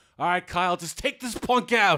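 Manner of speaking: booming, very loud hollering yell. Retelling a movie scene where the assistant coach yells: imitating someone yelling. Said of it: "just yells out".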